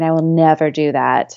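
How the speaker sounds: put-on disdainful tone. Recalling what she was once certain she would never do, acting it out mock-disdainfully. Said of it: "like with such disdain".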